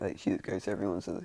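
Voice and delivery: ordinary talk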